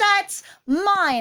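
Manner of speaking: nasty, aggressive, high-pitched yelling. Retelling a girl yelling at a mouse that took her key: imitating an aggressive yell. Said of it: "not even just petulant, like, really aggressively".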